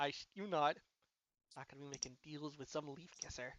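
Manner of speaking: muttering under breath. Voicing a character refusing deals with a leaf kisser: muttering under his breath. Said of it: "you could hear him say under his breath".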